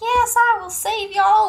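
very high Southern country twang. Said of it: "I don't know why I went country there".

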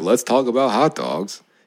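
dry, mocking, insincere, sarcastic tone. Retelling how the other speaker's line seemed to sound: imitating a sarcastic tone. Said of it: "I thought you were being sarcastic".

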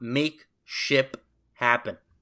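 slow, with the P in ship hit hard. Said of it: "I wanted to be sure to emphasize the, the P there".

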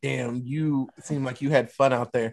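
ordinary delivery

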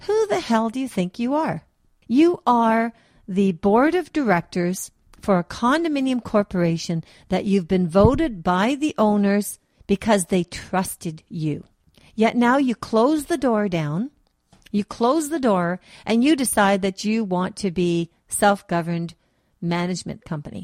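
fed-up, openly angry voice. Confronting a condominium board of directors on behalf of the owners, angry voice. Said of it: "do I sound angry? I am angry".

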